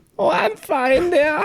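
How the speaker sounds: drawn-out, very high little character voice. Playing the cookie-package character in a bit: Lil Dutch Maid voice. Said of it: "the little Dutch maid".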